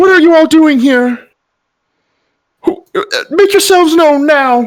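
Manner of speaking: very high, shrill, piercing calling voice. Voicing someone heard echoing out to the party, in a soft, shrill voice. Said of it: "you guys hear a soft, shrill voice".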